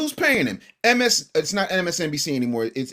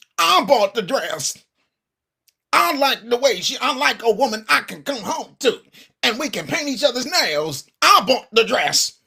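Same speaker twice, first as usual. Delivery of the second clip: put-on mocking voice, higher; 5 semitones higher than usual. Mocking a named pastor over buying gala gowns: imitating Jamal Bryant. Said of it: "let me put on my Jamal Bryant's".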